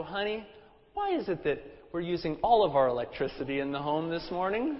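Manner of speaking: soft, sweet, gracious, loving tone. Retelling how he re-asked his wife about the lights, in a mock gracious, loving tone. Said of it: "repeated again in a gracious and loving tone".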